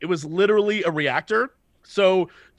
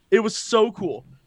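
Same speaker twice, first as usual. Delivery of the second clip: usual speaking voice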